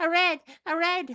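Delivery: high little voice. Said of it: "I love your little Magboil voice".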